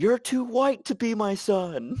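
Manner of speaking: put-on, very high, drawn-out teasing call from afar. Retelling a dad calling from a car in the distance, imitating dad calling from afar. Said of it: "He goes".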